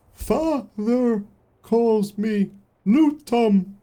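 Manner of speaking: shrill, very high, very loud creature voice. Storyteller voices a creature telling the player its name, in a creature voice. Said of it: "the creature looks up to you and goes".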